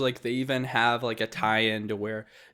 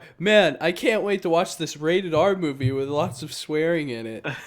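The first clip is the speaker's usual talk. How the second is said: acted-out, loud, high-pitched, pointed delivery; 6 semitones higher, 5 dB louder than usual. Retelling a remark made at the movie near a kid: imitating own loud remark. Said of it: "I really loudly go".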